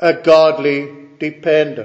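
opening a stressed, lifted within a falling tune.

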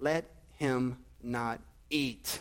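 very slow, low, deliberate, drawn-out delivery. Quoting a scripture command to listeners, said slowly. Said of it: "let me say this slowly".

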